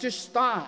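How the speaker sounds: put-on mildly firm, a little stern, firm tone. Recalling his daughter drawing on his back, the speaker retells telling her to stop: a little sterner, retold. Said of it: "I get a little sterner".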